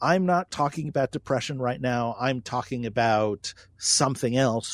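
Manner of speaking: usual speaking voice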